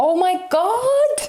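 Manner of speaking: stunned. Reacting to a tarot card that just turned up: shocked. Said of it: "I'm kind of just shocked".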